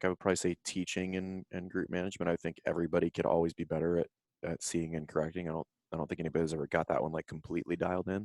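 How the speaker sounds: soft, hushed half-whisper throughout. Answering a question about teaching and group management, half-whispering. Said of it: "Why are you whispering?".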